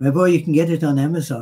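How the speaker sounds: lousy, bad fake Irish accent. Answering a listener in ireland about getting his book, in a lousy irish accent. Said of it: "it's a lousy accent".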